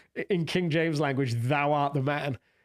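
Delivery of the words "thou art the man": ordinary talk, nothing marked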